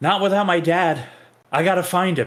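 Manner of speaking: high, loud crying out. Rael cries back after being told to back out, crying out. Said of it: "Rael cry back".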